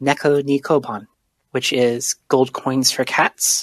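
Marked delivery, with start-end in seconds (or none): none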